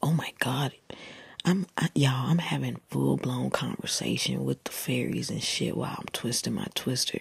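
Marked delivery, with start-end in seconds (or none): none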